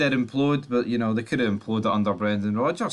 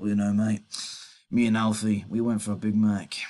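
bad, rough, unconvincing, so-so put-on Australian accent. Joking about a sacked manager in the news, do Ange Postecoglou in a bad Aussie accent. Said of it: "Not a really good Aussie accent".

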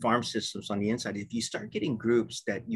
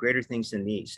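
ordinary talk

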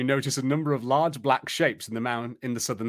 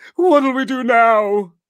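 shaking, trembling voice; 10 semitones higher, 10 dB louder than usual. As dragons circle the tower, Gnarly asks in a shaky voice. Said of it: "Gnarly asks in a shaky voice".

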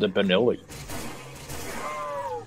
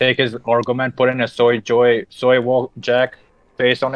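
plain

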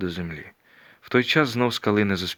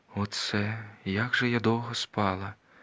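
hushed, slow, drawn-out musing murmur; 6 dB quieter than usual. A girl, just awake, speaks while looking around her: speaking quietly. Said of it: "тихо промовила дівчина".

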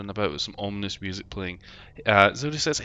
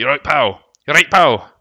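loud, booming, put-on Scottish accent; 4 semitones higher, 11 dB louder than usual. Speaker trying out Scottish-sounding words for friend: mock Scottish accent. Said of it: "Pal's a good Scottish".

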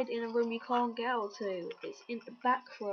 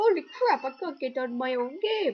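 put-on loud, belted, poorly done Italian accent; 2 semitones higher, 7 dB louder than usual. Playing a game, voicing what Mario is saying in a poor Mario impression. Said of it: "I do a poor impression of Mario".

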